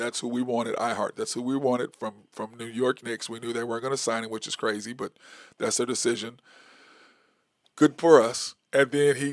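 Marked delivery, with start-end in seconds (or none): none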